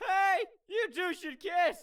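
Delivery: put-on full-on, heavy babyish baby talk. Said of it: "you appear to have a very severe case of baby voice".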